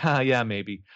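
acted laughing voice. Retelling a scene where a man answers Mona, imitating him laughing. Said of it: "And he's laughing".

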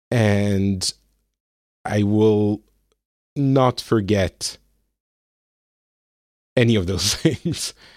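choked-up voice, halting, catching and breaking mid-phrase. Podcaster thanking the show and its supporters: getting a little emotional. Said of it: "I'm getting a little bit emotional".

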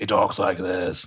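put-on gravelly voice. Discussing an actor's credits, showing how he talks, imitating a gravelly voice. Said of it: "he has like a super gravelly voice".

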